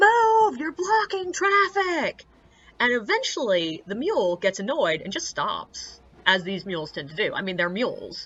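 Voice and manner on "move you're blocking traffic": high, loud, furious screaming. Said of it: "screaming out his window".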